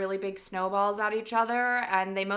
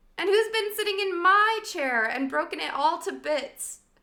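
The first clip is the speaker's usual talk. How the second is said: very high, squeaky voice, close to tears; 9 semitones higher, 4 dB louder than usual. Narrator reads the baby bear's line in a squeaky, tearful Baby Bear voice. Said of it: "squeaked the baby bear in tears".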